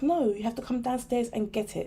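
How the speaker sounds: plain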